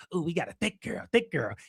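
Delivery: soft, creepy voice. Mocking how a man filming a woman talks, imitating a creepy guy. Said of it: "he talks like a creep".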